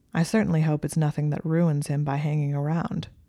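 usual speaking voice

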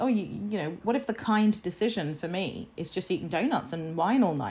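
normal talking voice

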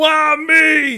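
high shrill wailing yell, me held long. Imitating a wrestler from a clip: imitating a yelled "why me". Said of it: "It's the way he yells".

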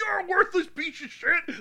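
furious, shrill, very high-pitched scream. Acting out a dad coming out to his son, retelling a scream. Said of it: "screaming at him".

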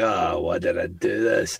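put-on, slow, rueful, regretful groan. Teasing the other speaker about disliking the movie: imitating regret. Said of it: "You're just like".

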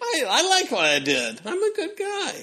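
smug, high-pitched, laughing, self-praising mock boast.

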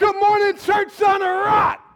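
very loud, high-pitched call out. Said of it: "actually say it like you mean it".

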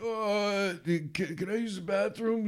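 put-on old man voice, high, slow, halting, urgent, desperate. Retelling an old man asking to use the bathroom: imitating an old man desperate for the bathroom. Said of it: "really dying to go".

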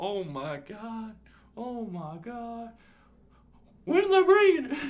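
loud, swooping, put-on thrilled, bursting with excitement. Retelling how he reacted to the news, imitating someone excited. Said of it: "He's excited".

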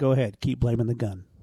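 put-on muttering, low, under the breath. Retelling what the lady at the range said walking away: imitating muttering under her breath. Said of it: "under her breath, you hear her say".

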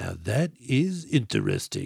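slow, dragged-out, rough delivery, done badly. Retelling a movie scene, quoting the antihero: terrible Riddick impression. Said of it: "I'm doing a terrible Riddick impression".

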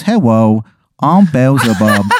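put-on small, young child's voice. Telling a grim story, voicing a giant talking fly: child's voice as Beelzebub. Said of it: "has, like, the voice of a child".

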